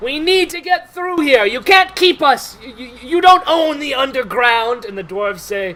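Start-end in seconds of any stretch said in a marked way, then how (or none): 0.0-4.9 very loud yell, shouting at full volume. Voicing a drow arguing with dwarves: yelling drow. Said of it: "you hear the drow yell".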